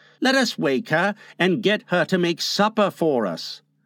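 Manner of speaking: plain reading voice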